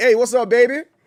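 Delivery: Houston way of talking. Showing how people from Houston talk: imitating how Houston people talk. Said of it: "that's just how those people talk".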